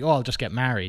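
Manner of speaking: loud, openly sarcastic, offhand remark. Retelling own past reply to a golfer about a job, retelling own sarcastic remark. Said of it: "and then I said sarcastically".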